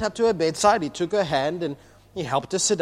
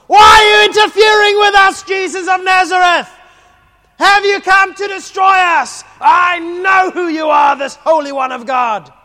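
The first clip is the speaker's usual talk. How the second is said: very loud, very high, shrill yelling; 13 semitones higher, 12 dB louder than usual. Reading the possessed man's words to Jesus in the synagogue, shouting. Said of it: "Sorry for shouting".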